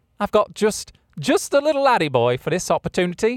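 put-on British accent, pitched high. Show the other speaker how Harry sounded, imitating Harry's accent. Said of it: "That accent killed me".

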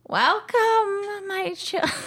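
very high, shrill, booming wicked witch voice. Announcing a new voice, the speaker debuts a character: wicked witch voice. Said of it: "This is Olivia. Wicked witch".

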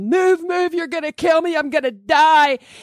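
mock desperate, high, frantic screaming. Retelling how players screamed while the speaker blocked the tv: imitating them screaming. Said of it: "while they're screaming at me".

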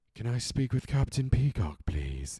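put-on sultry vamp voice. Retelling how she phones and asks for someone, in a put-on sultry femme fatale voice. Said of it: "put-on, sultry femme fatale voice".

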